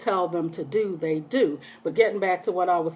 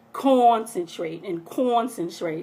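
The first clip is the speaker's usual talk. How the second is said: plain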